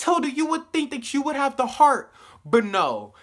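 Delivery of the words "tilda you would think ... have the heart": mock, high, raised, indignant angry outburst. Retelling own reaction to a show scene: imitating own angry words. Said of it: "And I was so mad".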